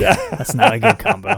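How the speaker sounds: high, slow, laughing through the words.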